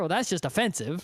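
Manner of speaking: ordinary talk, nothing marked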